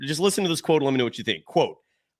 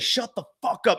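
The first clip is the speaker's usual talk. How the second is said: put-on yelling, higher pitched; 4 semitones higher, 3 dB quieter than usual. Retelling how a lady outside the house yelled during a live show: imitating someone yelling. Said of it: "she starts yelling".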